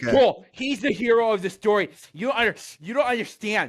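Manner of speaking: very high-pitched, outraged, raging rant. Speaker channels internet troll rage mid-conversation: mock internet-troll rage. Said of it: "I'm just trying to channel my".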